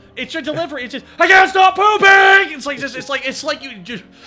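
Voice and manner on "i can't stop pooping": put-on yell, much higher and louder. Quoting a favorite moment from the other speaker's Naruto spoof, imitating Naruto's yell. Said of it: "sounds like you're yelling it at somebody".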